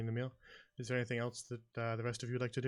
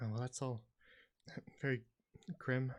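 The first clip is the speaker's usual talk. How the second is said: muttered under her breath. The shepherdess reacts to Martos and the skull, muttering under her breath. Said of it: "just kind of under her breath".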